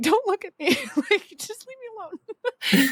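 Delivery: very high, drawn-out, distraught pleading voice. Recalling seeing someone she knew during a lap, acting out a distraught outburst. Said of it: "in the middle of another one of my emotional breakdowns".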